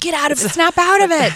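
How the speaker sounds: very high, very loud, urgent scream. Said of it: "my boyfriend was screaming at me".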